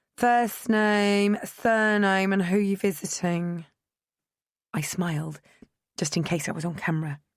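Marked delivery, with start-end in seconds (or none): 0.2-3.7 bored, booming, slow announcement voice. A woman over the intercom questions a visitor, in a bored, booming voice. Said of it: "A bored female voice boomed".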